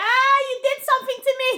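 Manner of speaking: shrill, very loud, high-pitched alarmed shout. Retelling drifting off as staff talked in hospital: retelling own shout. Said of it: "I shouted".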